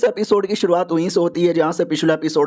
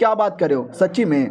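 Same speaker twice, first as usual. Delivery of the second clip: ordinary delivery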